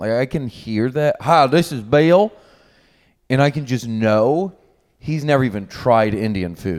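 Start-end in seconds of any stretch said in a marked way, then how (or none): 1.2-2.3 put-on Southern accent, higher and louder. Imitating an uncle's voicemail greeting: imitating uncle's southern accent. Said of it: "I can just tell things by his accent".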